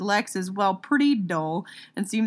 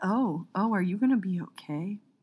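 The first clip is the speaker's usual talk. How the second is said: fake concerned, put-on worried tone; 5 dB quieter than usual. Reacting to a very poetic review's writer: mock concerned tone. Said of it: "I was very concerned for the writer".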